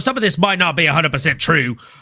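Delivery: put-on, fake Scottish accent. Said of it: "What was that accent, bro?".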